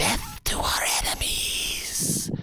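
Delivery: snake-like, sibilant hissing voice. A serpentine voice speaking to a girl it gave power: hissing serpentine voice. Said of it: "A serpentine voice hisses".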